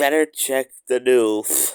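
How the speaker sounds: booming, very loud, swooping cartoon duck voice. Reading a story aloud, performing the duck's line: Daffy Duck voice. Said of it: "Can I do the voice of Daffy Duck?".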